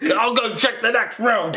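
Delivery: high, nasal screaming yell. Describing a wrestler screaming during a search: imitating Owen Hart screaming. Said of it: "screaming stuff while they're doing this".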